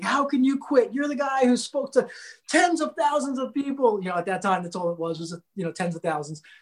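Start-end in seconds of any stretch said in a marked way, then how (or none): 0.0-4.0 high, disappointed, exasperated yelling. Retelling how the videographer in the van yelled at him: imitating someone yelling. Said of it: "he starts yelling at me".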